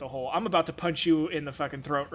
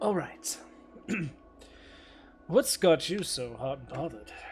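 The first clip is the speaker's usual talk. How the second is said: lowered, hushed near-whisper; 5 dB quieter than usual. The game master, as Balar sitting down at the table, speaks in a much lower tone. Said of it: "speaking in a much lower tone of voice".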